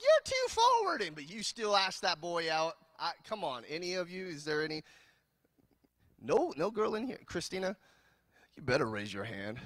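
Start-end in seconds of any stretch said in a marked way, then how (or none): 0.0-1.0 very high, loud scolding. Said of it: "your mama was like".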